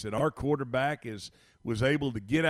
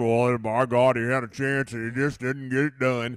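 gruff, rough-edged, unpolished voice; 2 semitones lower, 4 dB louder than usual. Describing how someone would not have said it, gruff Tom Barfield impression. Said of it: "in that gruff Tom Barfield".

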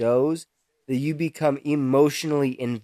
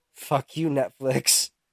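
mumbled, muttering under breath. Retelling what he muttered while binge watching shows on a security gig, mumbling under breath. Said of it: "mumbling under my breath".

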